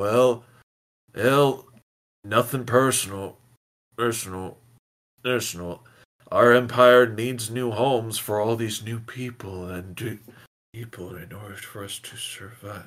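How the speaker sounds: alien invader voice. Narrating a game scene, voicing the alien, alien voice. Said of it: "the alien is trying to say".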